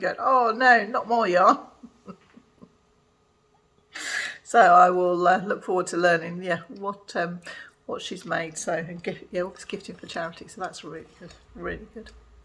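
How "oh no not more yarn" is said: complaining moan. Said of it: "my husband would have been moaning".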